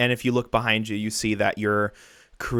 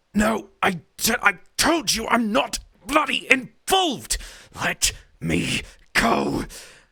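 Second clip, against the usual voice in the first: strained, very high delivery; 12 semitones higher than usual. Narrating a scene, voicing a character's line in a strained voice. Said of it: "You can now hear that voice strained".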